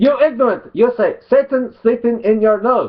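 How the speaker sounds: fake Arabic accent, very high-pitched. Performing the quoted words in the promised mock arabic accent. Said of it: "I'll do it in a mock Arabic, mock Arabic accent".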